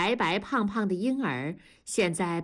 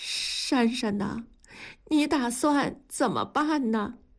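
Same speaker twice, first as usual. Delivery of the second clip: wavering, shaky, trembling, quavering; 4 semitones higher than usual. A mother asks her daughter Shanshan a question, in a trembling voice. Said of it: "用颤抖的声音问".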